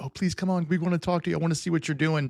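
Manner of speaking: mock, eager, kid-like pleading tone. Retelling own request for an interview, imitating eager kid-like begging. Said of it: "like I'm a little kid in a candy shop going".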